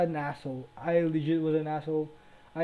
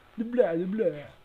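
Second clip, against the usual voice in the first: put-on vampire accent; 5 semitones higher than usual. Speaker riffing on accents with another speaker, Dracula accent. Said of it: "It's fucking Dracula".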